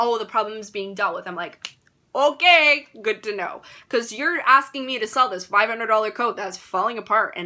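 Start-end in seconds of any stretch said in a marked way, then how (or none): none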